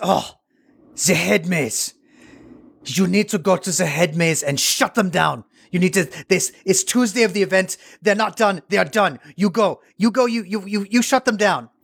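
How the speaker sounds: put-on French accent. Retelling what a man told him during an event, in a fake French accent. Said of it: "I'm doing the accent anyway".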